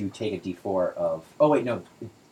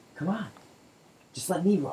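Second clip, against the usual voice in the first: tiny, very high-pitched little voice; 9 semitones higher, 3 dB quieter than usual. Voicing a little voice heard in a player's head: little voice in your head. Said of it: "a little voice in your head".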